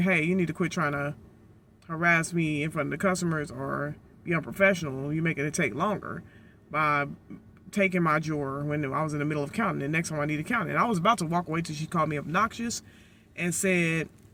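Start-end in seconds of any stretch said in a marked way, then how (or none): none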